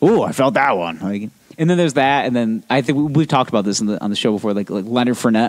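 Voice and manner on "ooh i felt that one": booming, huge T-Rex dinosaur monster voice. Retelling how a quarterback compliments hitters: imitating Andrew Luck's booming T-Rex voice. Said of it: "this big booming, like, T-Rex voice".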